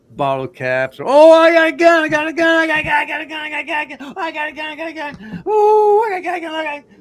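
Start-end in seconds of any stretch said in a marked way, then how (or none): 1.1-6.8 play-acted, very high, shrill, giddy, overexcited babble. Retelling a guy on a show who keeps showing his gun: imitating an overexcited guy. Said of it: "calm down, dude".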